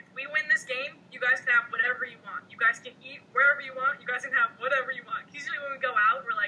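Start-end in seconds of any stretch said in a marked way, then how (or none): none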